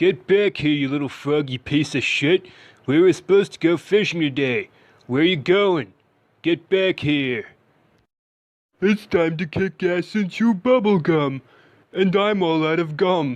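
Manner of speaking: very loud, high, dopey, stupid cartoon cat voice. Imagining two cartoon characters swapping voices, doing the cat in a stupid cartoon voice. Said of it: "saying things like that in that stupid fucking voice".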